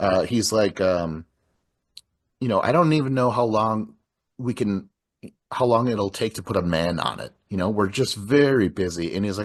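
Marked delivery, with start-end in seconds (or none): none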